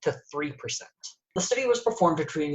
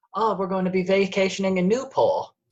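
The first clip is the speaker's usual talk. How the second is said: put-on patrician forties-era New England accent, old-fashioned, soothing; 3 semitones higher, 3 dB louder than usual. Describing someone's voice, the speaker demonstrates an old-fashioned New England accent. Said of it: "It very much has a New England accent".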